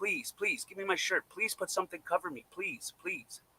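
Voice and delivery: high, crying, tearful, begging pleading voice. Retelling how a woman left exposed for hours cried: imitating someone crying and pleading.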